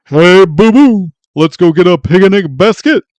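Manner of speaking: drawn out, big and loud. Testing the claim that two cartoon voices match, doing a Yogi Bear voice. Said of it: "the exact same as Yogi Bear".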